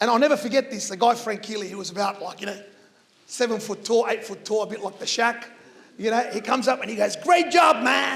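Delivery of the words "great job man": put-on American accent. Retelling when a very tall man came up and gave him a high five: imitating Frank Keeley, American accent. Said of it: "sorry about the American accent".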